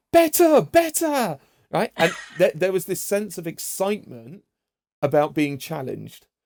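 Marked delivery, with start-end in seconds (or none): 0.1-1.4 very high, slow, excited squeal. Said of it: "there's this voice on the other line".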